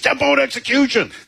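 put-on yelling. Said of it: "why are you yelling?".

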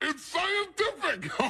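very high-pitched cartoon villain voice. Mocking a guy described as a scientist, in a Skeletor-like voice. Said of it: "Sounds like Skeletor".

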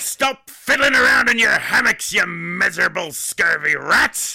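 put-on pirate captain voice. Playing a pirate taking over the radio station: pirate voice. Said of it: "looks like pirates have been taking over".

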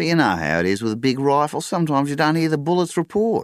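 amused, very high-pitched, loud voice. [name] speaks up after Mick's answer; smiling.

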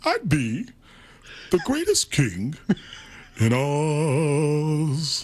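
dragged-out delivery with the last word held long. Showing off impressions to the others, doing a Cowardly Lion impression. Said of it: "that one might have been better than The Godfather".

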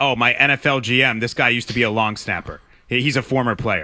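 heavily sarcastic, tongue-in-cheek. Mocking a hire by acting out a sarcastic hypothetical boast: sarcastic mock quote. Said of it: "I'm being sarcastic".

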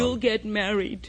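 ordinary talk

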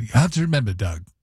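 bad put-on British accent. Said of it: "except he said in a British accent".

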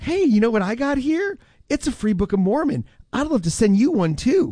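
put-on friendly, high young woman's sales-pitch voice. Retelling a YouTube ad pitch: imitating a young woman in an ad. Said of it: "a younger woman who is like".

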